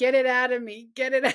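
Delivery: sobbing, tearful crying with repetition. Retelling a nephew's words during a bad shrooms trip: imitating someone crying. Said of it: "crying, saying".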